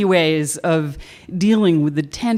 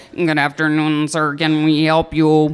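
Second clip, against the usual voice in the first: mechanical, flat monotone robot voice. Retelling how he greeted a man who overheard them, in a robot voice. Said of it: "I talked to him in the robot voice".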